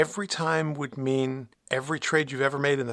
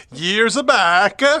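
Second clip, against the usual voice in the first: sudden put-on Italian accent, loud and pitched up; 6 semitones higher, 11 dB louder than usual. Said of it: "I sound Italian there all of a sudden".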